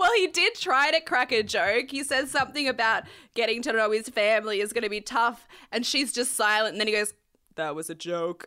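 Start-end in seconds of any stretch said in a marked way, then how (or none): 7.5-8.5 bone-dry, low, soft, humorless deadpan delivery. Retelling a man's joke after the woman stays silent: retelling a deadpan line. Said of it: "So deadpan".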